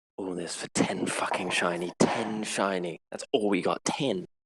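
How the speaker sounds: quiet muttering, grumbling under the breath. Playing a character during a chase, muttering under her breath. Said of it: "Nora's just saying under her breath".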